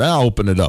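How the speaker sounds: usual speaking voice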